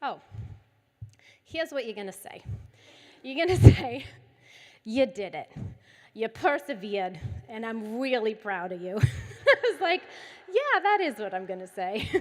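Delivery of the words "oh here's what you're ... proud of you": put-on heaviest, broad, thick Boston accent. Speaker retells what a child told her to say, thick boston accent. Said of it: "he has the thickest Boston accent you've ever heard".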